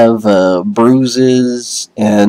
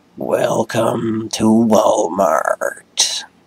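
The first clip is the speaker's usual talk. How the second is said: soft, rasping, groaning, raspy moan; 7 dB quieter than usual. A game master voices a figure greeting the player's character, in a raspy, moaning voice. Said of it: "you hear a raspy, moaning voice who greets you with".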